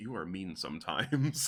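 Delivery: mumbled quietly under the breath, to oneself. Player's character speaks to a companion while holding her hands; muttering.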